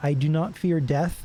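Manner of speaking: plain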